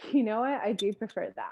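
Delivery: mock voice with a slight bit of attitude. Speaker acts out how one might state a preference: acting out a little tone. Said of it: "I even said it with a little bit of tone in my voice".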